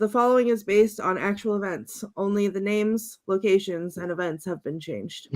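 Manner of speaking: ordinary talk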